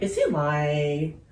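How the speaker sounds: slow, unsure, wondering, doubtful inner voice.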